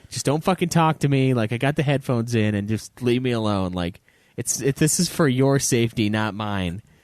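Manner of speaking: ordinary talk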